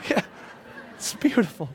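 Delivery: breathy, choked-up near-whisper, close to crying. Reacting to what was just said: on the verge of tears. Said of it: "I think I'm going to cry".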